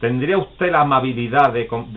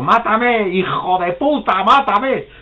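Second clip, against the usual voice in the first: put-on, very high, dragged-out yell; 9 semitones higher, 4 dB louder than usual. Acting out a man kneeling before a bus, shouting at its driver: retelling a shout. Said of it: "le gritaba al autobusero".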